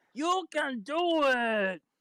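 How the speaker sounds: hollering, high-pitched yell. A player helps a teammate's strength roll by yelling encouragement, yelling. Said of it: "just yelling".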